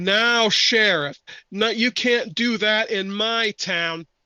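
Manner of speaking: angry, indignant voice. Narrating a scene, the speaker voices someone standing up at the back of the theater, angry. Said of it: "You hear another angry voice".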